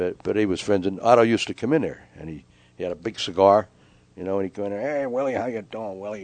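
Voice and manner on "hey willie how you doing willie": talking in a gangster-style mobster voice. Retelling how Otto greeted Willie when he came in, Otto's gangster voice. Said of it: "he'd talk like a gangster".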